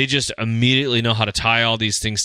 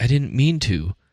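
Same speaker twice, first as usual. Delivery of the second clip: understated, low-key, small and gently said. Retelling a character's apologetic line from a show: imitating someone speaking quietly. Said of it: "and so quietly, he's like".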